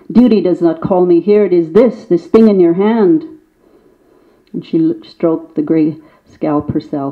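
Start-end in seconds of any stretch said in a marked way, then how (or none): 0.1-3.2 spitting the words. Reading a story aloud, the old one answering back: spitting the words. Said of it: "the old one spat".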